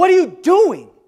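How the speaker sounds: very high, very loud, shrill scream. Retelling how a doctor reacted to a nurse: imitating a doctor screaming. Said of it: "the doctor starts screaming at her".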